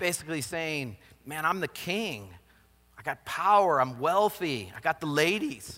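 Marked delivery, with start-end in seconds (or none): 4.8-5.8 cracking, breaking voice. Speaker paraphrasing the king's boast to listeners, voice cracking. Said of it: "My voice cracked when I said that".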